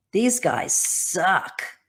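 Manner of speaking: put-on blunt, tough New York accent. Retelling a tough New York girl's blunt reply: imitating a tough New York girl. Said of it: "it was so New York tough girl".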